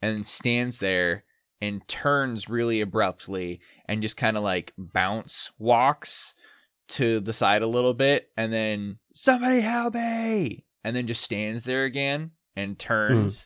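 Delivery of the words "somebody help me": mock, very high-pitched scream. Retelling what a man did, mimicking his scream. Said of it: "And he like screams".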